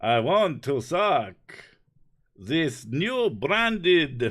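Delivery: loud, high put-on Transylvanian vampire accent. Doing a joke line in the voice just introduced, Transylvanian Dracula voice. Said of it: "my Transylvanian, vaguely sounding Dracula voice".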